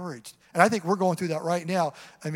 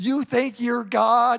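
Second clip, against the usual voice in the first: weird, high, loud, drawn-out yell; 5 semitones higher, 5 dB louder than usual. Retelling an angry pastor's weekly line: imitating a weird yelling voice. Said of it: "he just do this weird voice".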